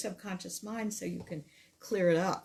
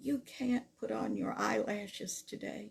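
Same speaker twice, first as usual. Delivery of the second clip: small, tiny little voice; 3 semitones higher, 4 dB quieter than usual. Retelling what a voice from under the bed covers said, in a tiny little voice. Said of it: "I hear this tiny little voice that says".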